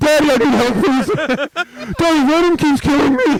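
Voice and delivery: loud, high, slow talking with mouth on mic. Retelling how a new player begged for help in a game: imitating a friend talking into the mic. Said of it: "talking like this".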